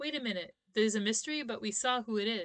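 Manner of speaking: ordinary talk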